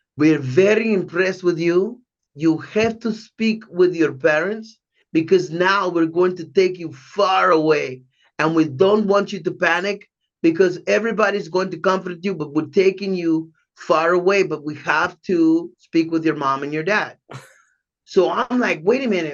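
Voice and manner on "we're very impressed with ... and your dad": put-on Israeli accent. Retelling what the owner told him, in Menachem Golan's Israeli voice. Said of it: "in his Israeli voice".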